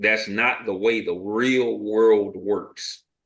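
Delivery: very slow, deliberate, emphatic delivery.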